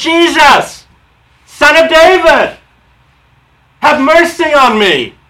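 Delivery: desperate, drawn-out shouting. Retelling a man calling out again after the crowd rebuked him, shouting. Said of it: "he shouted more".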